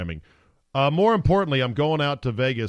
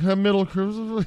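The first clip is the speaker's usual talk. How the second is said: mumbled, pitched way up high; 9 semitones higher than usual. Retelling own unsure answer about a fight's weight class: imitating own mumbling. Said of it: "I mumbled".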